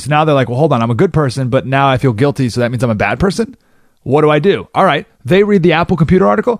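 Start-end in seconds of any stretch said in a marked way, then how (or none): none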